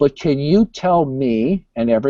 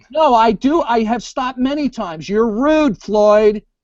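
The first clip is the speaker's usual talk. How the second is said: shrill, raised voice pitched very high; 10 semitones higher than usual. Arguing with Floyd about interruptions, raised voice. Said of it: "Excuse me for raising my voice".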